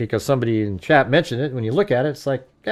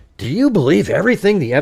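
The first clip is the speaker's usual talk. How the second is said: put-on passive-aggressive tone, higher and louder; 6 semitones higher, 4 dB louder than usual. Repeating a question from Adam back to him: imitating a passive-aggressive question. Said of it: "it's being passive aggressive".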